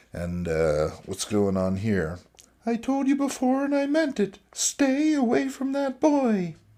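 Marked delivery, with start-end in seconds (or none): 2.6-6.5 put-on woman's voice, high-pitched, higher. Reading a comic panel aloud, voicing a woman: higher-pitched Casey Kasem voice. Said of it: "she sounds like a higher-pitched Casey Kasem".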